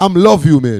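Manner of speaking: put-on Haitian-accented voice. Imitating how Haitian people phrase things: put-on Haitian accent. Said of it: "exaggerate it, with the little French accent".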